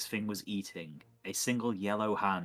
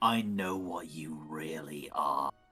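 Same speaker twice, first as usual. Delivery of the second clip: slow, eerie, unsettling creepy delivery; 5 semitones lower than usual. Voicing a pet that stares through a player and speaks: creepy. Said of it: "Oh my God, creepy dude".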